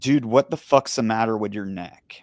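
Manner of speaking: usual speaking voice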